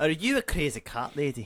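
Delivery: put-on Scottish accent. Told to take it away, asking the other person a question, Scottish accent. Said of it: "Take it away, you Scotsman".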